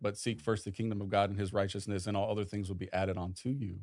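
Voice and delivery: ordinary talk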